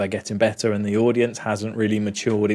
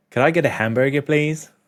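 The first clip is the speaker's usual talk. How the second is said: best-effort put-on American accent; 4 semitones higher than usual. Asked to do their best American accent, the speaker tries an attempted American accent. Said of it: "Do your best American accent right now".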